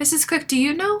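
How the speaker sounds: courteous, polite tone. Showing how a question to Missus Cook sounds in person: really polite tone. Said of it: "you can be really like, ... Like really polite".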